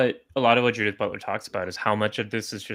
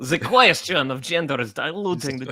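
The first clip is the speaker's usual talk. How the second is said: put-on generic, stock Italian accent; 5 semitones higher than usual. Reading out the Pope's words in a generic Pope accent. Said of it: "I'm just doing a generic Pope accent".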